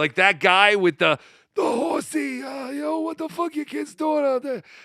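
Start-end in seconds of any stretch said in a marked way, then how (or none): 2.7-4.6 put-on high, fast New York accent. Imitating that guy with the horsey, in a stereotypical New York Guido accent. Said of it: "stereotypical New York Guido".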